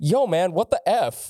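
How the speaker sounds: put-on very low, bone-dry, flat monotone. Joking about a guest spot, acting out a dead-faced look: mock deadpan. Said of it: "dead-faced, pan looking at Evan".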